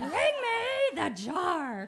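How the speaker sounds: very slow, high, booming cartoon baboon voice, "me" stretched. Parent showing how they get their kids' attention: Penguins of Madagascar baboon voice. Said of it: "we do the voice".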